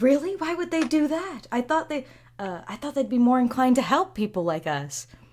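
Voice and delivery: hushed whisper. Voicing a servant gossiping at the side of a room: whispering. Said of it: "they're whispering".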